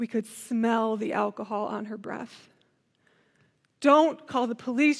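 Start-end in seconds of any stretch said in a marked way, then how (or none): 3.8-5.0 imploring, begging, pleading tone. Retelling how the other driver begged them not to call police, imitating someone pleading. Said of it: "she pleaded with us".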